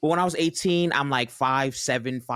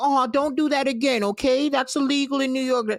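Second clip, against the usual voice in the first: put-on high, grandmotherly tone like an old woman; 12 semitones higher than usual. Retelling how a judge scolded gently: imitating a grandma-like judge. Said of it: "talking to me like somebody's grandma".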